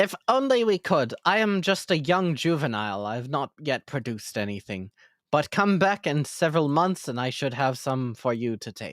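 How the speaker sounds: simple, sincere, earnest little flower voice. Asked by the party for seeds, the young jungle flower answers in talking jungle flower voice. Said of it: "The grass just kind of looks at you like confused, and then you see that there is one um, jungle flower. It's sort of bluish petals and it has a green center to it. Um, it turns towards you a / It's s".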